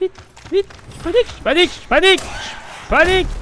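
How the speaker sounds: high, loud, panicked cries.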